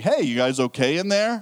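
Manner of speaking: put-on sarcastic tone. Annoyed driver waiting behind a car imagines calling out, imitating own sarcastic tone. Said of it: "the sarcastic".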